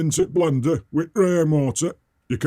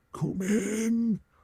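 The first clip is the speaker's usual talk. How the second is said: eerie, hushed, pitched up, drawn out; 5 semitones higher, 8 dB quieter than usual. Retelling what a funny little man said on opening the door: creepy voice. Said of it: "in a really creepy voice".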